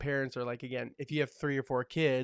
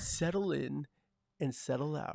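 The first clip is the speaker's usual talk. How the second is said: radio jockey patter, on-air announcer voice. Showing how he'd sound hosting a radio show: radio DJ voice. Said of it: "like a radio jockey".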